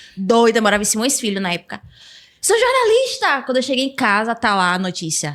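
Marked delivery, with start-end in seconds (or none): 2.4-3.4 play-acted, very high yelling, pitch way up. Retelling the day she got her last grade: imitating her own past shout.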